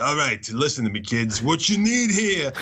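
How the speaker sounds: put-on Italian-American New York accent. Imitating a creative director pitching in: imitating a New York Italian guy. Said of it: "he talks just like that".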